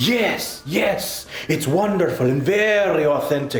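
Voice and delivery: put-on vampire-style Eastern European accent. Asked about keeping the accent all video, answering in Contracula's Eastern European accent. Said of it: "I'm going for this Eastern European thing".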